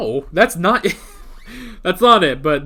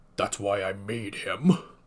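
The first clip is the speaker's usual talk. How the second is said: put-on anime character voice; 8 semitones lower, 11 dB quieter than usual. Quoting Endeavor's line about why he made Todoroki: Endeavor voice. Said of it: "let me get the proper fucking Jiren voice going. ... That's the best I can do for Endeavor's voice".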